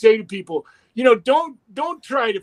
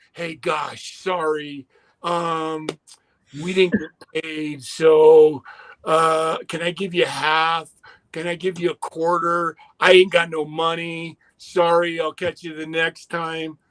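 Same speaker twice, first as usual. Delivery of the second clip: mock apologetic promoter voice, slow, hesitant, drawn-out "so"; 3 semitones lower than usual. Describing road life, imitating a promoter who can't pay: imitating a sorry promoter. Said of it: "have a promoter going".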